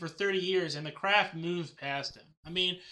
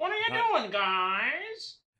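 put-on whiny voice, pitched higher; 10 semitones higher than usual. Acting out a creator upset his stories went unused: whining George Lucas impression. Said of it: "That is George Lucas impression".

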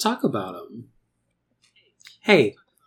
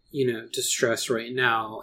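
plain

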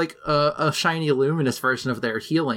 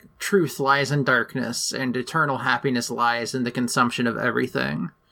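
ordinary talk, nothing marked

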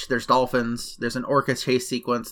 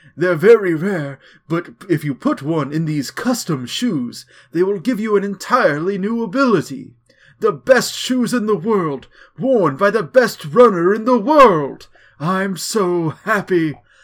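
put-on voice of a stooped old man, high and raised; 6 semitones higher, 5 dB louder than usual. Reading out the lines of an old hunched man, in an old hunched man voice. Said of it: "you talk to this old man who's hunched over outside of it".

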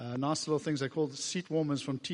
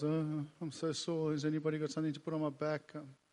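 put-on self-pitying tone, quieter; 4 dB quieter than usual. Acting out how the prisoners did not complain, mock self-pitying. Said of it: "not feeling sorry for themselves".

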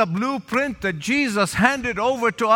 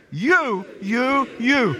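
each word you heavily stressed. Leading listeners to repeat the word three times, stressing 'you'. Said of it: "Where's the emphasis here?".

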